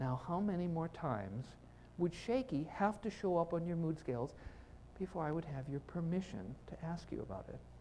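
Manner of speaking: put-on, soft, sugary, honeyed, very sweet voice. Retelling a question asked as he was leaving, in a put-on sweetest voice. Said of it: "in my sweetest voice".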